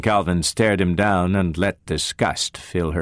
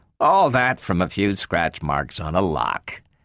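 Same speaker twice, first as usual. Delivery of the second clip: ordinary delivery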